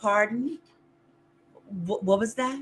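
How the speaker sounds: overly proper voice, every word carefully correct. Speaker acts out a woman asking them to repeat themselves: imitating her proper speech. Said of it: "you're gonna make me be proper".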